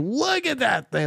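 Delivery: very high, thrilled shout, acted out. Retelling what a pilot shouted on seeing a UFO: imitating someone shouting excitedly. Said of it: "he's shouting to".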